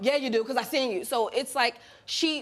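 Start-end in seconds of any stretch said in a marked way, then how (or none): none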